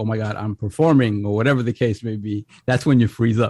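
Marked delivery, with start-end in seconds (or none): none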